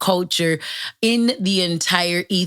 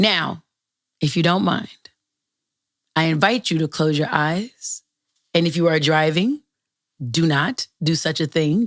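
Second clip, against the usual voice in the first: buttery, silky smooth delivery. Podcast host inviting listeners to close their eyes, smooth buttery voice. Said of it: "this buttery voice".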